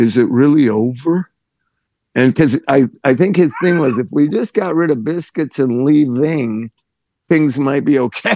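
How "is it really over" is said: put-on very sad voice, much slower. Retelling a man who never talked asking about the club ending, imitating a very sad voice. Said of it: "in the saddest of all possible voices".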